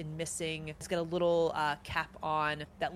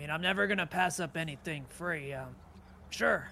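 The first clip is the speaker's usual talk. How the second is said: seafaring fisherman character voice. Narrating a game scene, a fisherman accepts a free bottle, in a fisherman character voice. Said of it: "a man that has spent much of his time at sea, this gruff beard".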